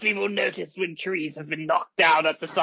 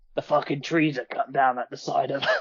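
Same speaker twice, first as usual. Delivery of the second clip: put-on Cockney-accented speech. Answering a party member's question in character with an East End London accent. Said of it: "Krill if Krill was brought up in the East End of London".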